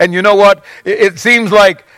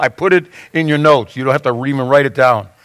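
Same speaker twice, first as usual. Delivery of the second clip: ordinary delivery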